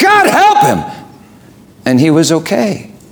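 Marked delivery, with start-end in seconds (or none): 0.0-1.1 very high-pitched, piercing shrieking scream. Recounting a past moment when they screamed out, retelling a scream. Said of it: "I just screamed".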